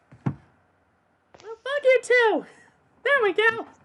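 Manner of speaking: very high, very loud, slow, drawn-out shouted character voice. Told they can't do it, the speaker snaps back in the Clover voice. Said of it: "Stop doing the Clover voice".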